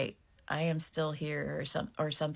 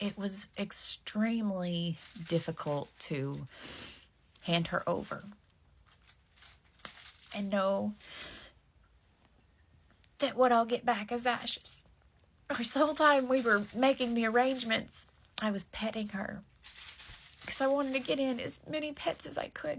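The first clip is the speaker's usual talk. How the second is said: crying, tearful, high breaking voice; 6 semitones higher than usual. Recalling handing over her pet to be cremated: crying. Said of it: "I'm about to stop crying".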